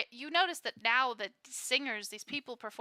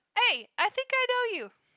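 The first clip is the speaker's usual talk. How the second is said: very high, loud, half-remembered attempted Jersey accent; 11 semitones higher, 4 dB louder than usual. Voicing a character who walks up to a player: attempted Jersey accent. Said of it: "how to do a fucking Jersey accent".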